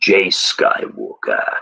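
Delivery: put-on dark, sinister, villainous old-man voice. Saying a name that ends in Skywalker: Emperor Palpatine voice. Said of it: "I always have to say Skywalker in the Emperor Palpatine voice".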